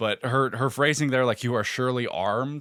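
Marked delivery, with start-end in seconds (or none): none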